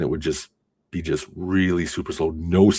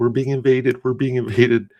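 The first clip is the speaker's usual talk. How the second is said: put-on upset, alarmed, high tearful crying; 7 semitones higher, 4 dB louder than usual. Retelling an older sister coming home crying: imitating a crying sister. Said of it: "she's crying".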